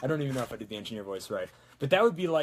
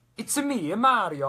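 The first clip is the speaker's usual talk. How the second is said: high, loud Italian accent; 9 semitones higher, 7 dB louder than usual. Talking about voices done before, the speaker does a Mario Italian voice. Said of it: "I did an Italian voice".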